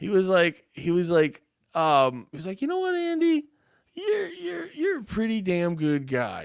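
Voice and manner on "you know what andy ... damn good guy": very high, astonished, shocked, acted-out voice. Retelling a work buddy's compliment: imitating a shocked compliment. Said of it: "with a lot of shock in his".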